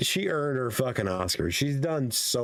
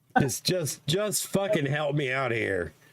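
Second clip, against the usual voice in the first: exasperated, fed-up New York accent. Asking someone to help out, sounding like a pissed-off New Yorker.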